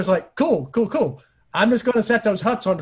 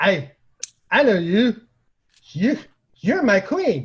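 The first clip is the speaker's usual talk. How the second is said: put-on drunken delivery. Retelling drunkenly greeting someone at Vlad's: acting drunk, as retold. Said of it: "drunk out of my brain".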